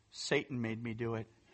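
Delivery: bone-dry deadpan, very low pitched and hushed. Retelling a son's reply to his mother, retelling a deadpan reply. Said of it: "he looks at her and deadpans".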